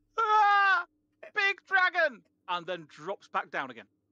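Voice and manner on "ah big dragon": very loud, very high, full-lunged shriek. A player voices Genia crying out in Draconic, screaming at top of lungs. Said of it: "Genia screams at the top of her lungs".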